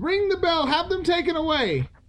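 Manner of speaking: very high, frightened, gasping voice. Mr. Howard, gazing at crawling creatures around his chair, speaks; gasping. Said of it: "he gasped".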